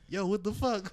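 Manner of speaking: usual speaking voice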